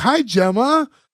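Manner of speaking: overdone, laid-on-thick delivery. Retelling a scene from the show, imitating Marty's overplayed greeting. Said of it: "he really overplays the "Hi, Gemma."".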